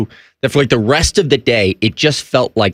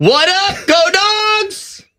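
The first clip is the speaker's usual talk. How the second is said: shrill, high, put-on holler with "dogs" drawn out. On a show segment with a fill-in host, imitating the absent co-host, mock-yelling. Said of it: "You're going to act like her".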